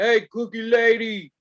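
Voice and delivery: light hint of a big man's call. Recalling a man who wanted cookies calling out to the speaker: imitating a booming deep voice. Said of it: "big booming voice say ... like real deep voice".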